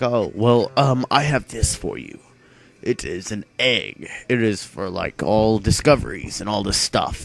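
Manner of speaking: put-on talking in an elderly old man voice. Retelling a scene, the speaker voices an old man character, old man voice. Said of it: "I'm talking like an old man".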